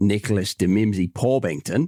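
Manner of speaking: Australian accent on a name. Answering a quiz question, repeating the answer's name in an Aussie accent. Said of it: "let me do this in um, an Aussie accent".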